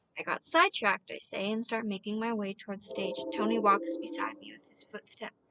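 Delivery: ordinary delivery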